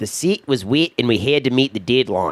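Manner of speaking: put-on New Zealand accent, Kiwi vowels throughout. Quoting a guy they always cue up for a New Zealand accent. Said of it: "I always cue up the uh, New Zealand accent by this one guy. He goes".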